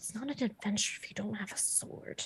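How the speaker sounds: hushed, whispered muttering under the breath. Voicing a character's reaction during the game, muttering to herself. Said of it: "She's like muttering to herself".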